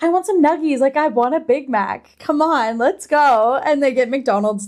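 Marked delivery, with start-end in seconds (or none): 0.0-3.5 easygoing, casual, totally unfazed and unbothered. Retelling a book scene, voicing a character who stays relaxed after violence. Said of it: "Scythe is so relaxed, fine, whatever".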